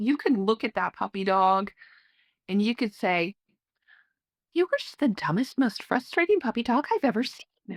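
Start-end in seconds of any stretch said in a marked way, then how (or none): 4.5-7.8 sweet, affectionate, doting voice with raised pitch. Speaker shows harsh words to a puppy spoken in a loving sweet tone. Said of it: "That tone says, "I love you."".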